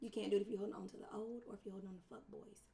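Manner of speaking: fast, hushed conspiratorial secret whisper. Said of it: "you didn't hear that from me".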